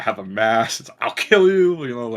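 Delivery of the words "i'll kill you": very loud, shrill, violent screaming outburst. Describing a goth game character's violent quotes: imitating a character screaming. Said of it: "constantly screaming".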